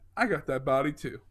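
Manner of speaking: ordinary delivery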